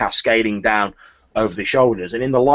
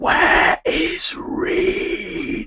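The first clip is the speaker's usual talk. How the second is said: harsh, scraping, grating rasp. Telling a story, voicing a figure with a pulsating neck in a rasping voice. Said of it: "a rasping voice goes".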